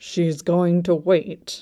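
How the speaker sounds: said through gritted, clenched teeth. Narrator reading a character's prediction, spoken through gritted teeth. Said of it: "predicted between gritted teeth".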